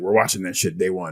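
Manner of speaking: plain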